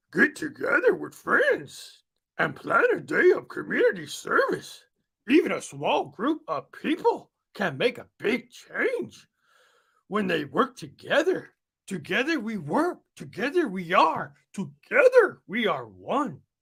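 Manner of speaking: character voice with big, wide swooping pitch swings. Reading a message aloud, trying out a Yoda voice: Yoda voice. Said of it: "I'm gonna try to read this in Yoda".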